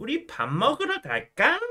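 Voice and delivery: put-on very high, very slow cutesy baby talk, aegyo. Demonstrating Korean aegyo for educational purposes, aegyo cutesy speech. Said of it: "But in like 애교".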